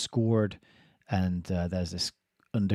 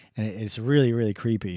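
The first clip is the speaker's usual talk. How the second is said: ordinary talk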